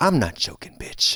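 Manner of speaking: put-on passive-aggressive, hardened tone. Acting out their tone after years of rejection and ghosting, mock passive-aggressive. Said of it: "passive aggressively like I I my tone is so is is hardened".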